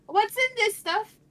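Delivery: yelling in a character voice. Asking what is in the drink, yelling in character. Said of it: "And she yells".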